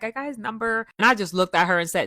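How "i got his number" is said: giddy, gleeful, happy. Retelling what a friend said after getting a number: imitating someone giddy and happy. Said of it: "She was all giddy and happy and smiling like".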